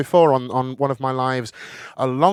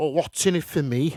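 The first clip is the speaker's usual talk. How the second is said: put-on Liverpool accent; 3 semitones higher, 4 dB quieter than usual. Telling a joke, voicing Artie's answer to a man's request: Artie in a Liverpool accent. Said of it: "I've never done it in Liverpool accent before".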